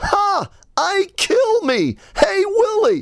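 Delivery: very high, drawn-out, stretched alien voice. Recalling an 80s commercial, the speaker does its alien puppet: ALF impression. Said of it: "There's my Elf impression".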